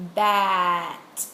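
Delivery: bat said sound by sound. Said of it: "listen as I say this word slowly".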